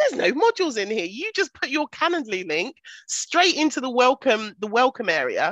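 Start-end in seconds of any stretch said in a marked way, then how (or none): 0.0-1.1 put-on talking through giggles, pitched up. Retelling finding the course had no modules: retelling own giggling. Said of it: "I was literally giggling".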